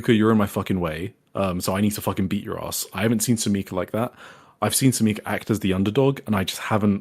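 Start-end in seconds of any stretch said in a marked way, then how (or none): 0.0-2.9 put-on aggressive voice. Recounting a match, the speaker quotes Sumika threatening Yuka, mock-aggressive Sumika impression. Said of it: "she was so aggressive".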